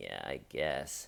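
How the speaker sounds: crestfallen, dejected, very hushed, barely audible voice. Retelling Jason's answer, imitating Jason's dejected voice. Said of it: "in a real dejected voice, like".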